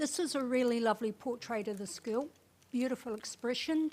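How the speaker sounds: loud, talking around a full mouth, chewing. Asked for a comment on a photo, talking with a mouthful of chocolate. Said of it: "got a mouthful of chocolate".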